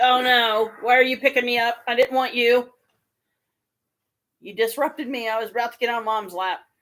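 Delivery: voice of a pet cat. Voicing the cat while she is picked up: voicing the cat Kalika. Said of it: "She's like".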